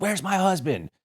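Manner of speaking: very high-pitched, raging, angry scream. Retelling a furious woman at the back door, imitating a woman yelling. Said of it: "she's yelling and screaming".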